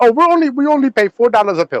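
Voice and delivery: botched, high-pitched put-on Indian accent. Imitating a politician quoting a low pill price, in an indian accent. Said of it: "that was the Indian accent".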